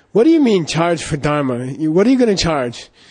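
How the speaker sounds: furious, indignant, all-out angry outburst. Retelling how he replied when asked what to charge, mock-angry. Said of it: "he got all angry. He got double angry".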